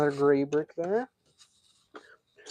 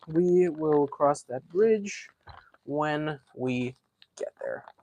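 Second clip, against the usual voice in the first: slow, deliberate delivery. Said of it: "But we'll cross that bridge".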